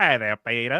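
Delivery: put-on cartoon character voice. Showing what Cleveland sounds like, speaker greets Peter in Cleveland voice. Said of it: "This is Cleveland".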